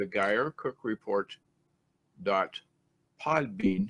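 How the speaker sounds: slow, low, halting, deliberate word-by-word pace. Spelling out the podcast web address for audio listeners, speaking slowly. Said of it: "I'll say it slow".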